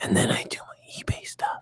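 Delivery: high-pitched mocking whisper. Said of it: "you have to, like, whisper".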